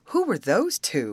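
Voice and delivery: ordinary talk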